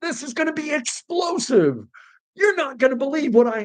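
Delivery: hyped clickbait-style delivery, pitched way up. Speaker complaining about YouTubers' specific voice, imitating an over-the-top YouTuber voice. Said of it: "oh, tone it down, guys".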